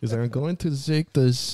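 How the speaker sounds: moderate Swedish accent. Trying a line after mentioning a Swedish guy, moderate Swedish accent. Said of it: "That's a moderate Swedish accent".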